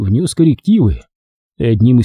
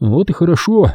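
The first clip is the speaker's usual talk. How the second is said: muttered, much higher pitch; 5 semitones higher than usual. Reading a story, the narrator answers a man who says he has heard about him, muttering. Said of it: "пробормотал я".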